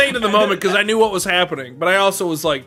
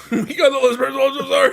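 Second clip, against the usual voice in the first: screaming, higher; 6 semitones higher than usual. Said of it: "you literally scream".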